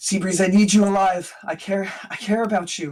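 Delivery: anxious, panicky, worried, urgent tone. Describing voices echoing while flying toward the city, acting out Andy panicked and worried. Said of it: "you can hear the panic and the worry in their voice".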